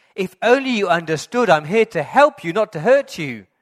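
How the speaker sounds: very loud, high-pitched, booming, frustrated shout. Retelling how the dad, trying to help a bird, suddenly shouts: imitating the dad shouting. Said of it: "he suddenly shouts".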